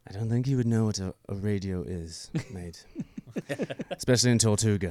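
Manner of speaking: put-on pirate voice. Doing a couple of voices while talking about movie characters, Jack Sparrow voice. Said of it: "Let's do a couple little voices".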